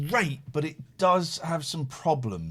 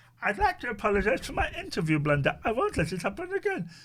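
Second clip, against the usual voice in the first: contrite, apologetic voice, raised pitch; 7 semitones higher than usual. Act out the apology for an interview blunder, in a David impression. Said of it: "That's a really good impression of him".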